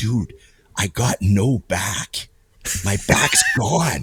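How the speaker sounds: very slow, almost whispered delivery. Retelling what he said while leaning in close: imitating a whisper. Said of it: "almost like he's whispering".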